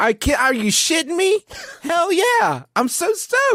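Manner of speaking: mock very high, rising, can't-contain-it super-jazzed gush. Acting out a character who is pretend super jazzed about dinosaurs. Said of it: "super jazzed about it".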